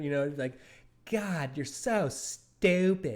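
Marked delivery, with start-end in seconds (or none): 1.1-3.2 put-on high, slow, tough old grandmother voice. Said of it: "he would start talking like her".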